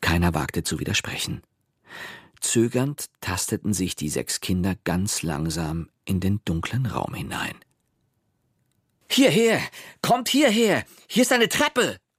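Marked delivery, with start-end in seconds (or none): 9.1-11.9 very high, thrilled, excited calling out. Narrator reads a child calling his friends in a dark room: excited call. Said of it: "rief Pepe plötzlich aufgeregt".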